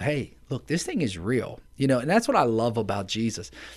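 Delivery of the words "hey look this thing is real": plain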